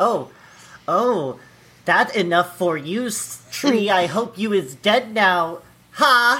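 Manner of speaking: put-on taunting voice. Acting out the woman in the video taunting a tree: imitating the woman in the video. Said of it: "She's like".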